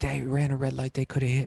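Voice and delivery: agitated, worked-up man ranting and screaming. Retelling how the man kept screaming at the kids: imitating a man screaming. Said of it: "just screaming. He's like".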